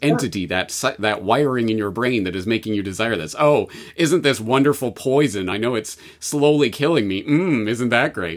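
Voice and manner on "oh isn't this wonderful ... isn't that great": heavy sarcasm with false delight, mocking tone. Acting out self-talk that makes fun of a habit: sarcastic. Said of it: "treating it almost like a sarcastic".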